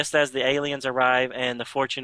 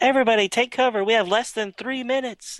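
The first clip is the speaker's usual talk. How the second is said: put-on yelling, higher pitched; 10 semitones higher than usual. Retelling how a character on beaming down warns everyone: imitating someone yelling. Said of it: "yelling at everybody".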